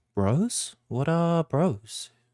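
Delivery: high-pitched, slow small dragon creature voice. Voicing the small dragon asking Ransom a question: voicing a small dragon. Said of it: "it looks at you, Ransom, and says".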